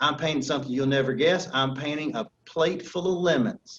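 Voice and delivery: put-on Southern American accent. Quoting your grandmother telling what she is painting, in a Southern accent. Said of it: "she's got this fantastic Southern voice".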